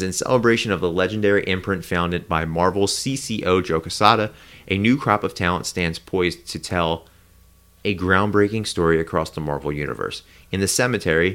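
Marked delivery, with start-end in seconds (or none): none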